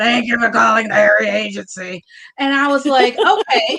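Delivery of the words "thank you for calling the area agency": rough voice of a lifelong smoker. Recalling a woman at the area agency answering the phone, imitating Gertie's smoker voice. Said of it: "she sounded like she'd been around truckers her whole life".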